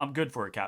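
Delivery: through a clenched jaw. Game master voicing a character answering the captain, through a clenched jaw. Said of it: "he kind of clenches his jaw and he says".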